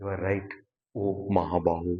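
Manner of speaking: ironic praise with sarcastic undertone. Quoting Bhagavan's words to Arjuna with an acted sarcastic undertone. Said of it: "See that undertone of sarcasm?".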